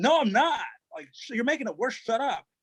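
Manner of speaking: furious, fed-up, high angry yell. Retelling a snake on the wires, he re-enacts answering his wife: retelling own angry yell. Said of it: "I yelled at my wife".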